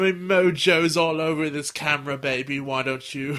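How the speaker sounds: slow, drawn-out, creepy drawl. Imitating the photographer from the dub, compared to Austin Powers: Austin Powers voice. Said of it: "her photographer is Austin Powers".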